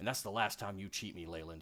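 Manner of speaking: surly, grumpy dwarf voice. Voicing a dwarf storming out of a room, yelling back: surly dwarf voice. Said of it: "a surly dwarf come, like, you know, come stomping out".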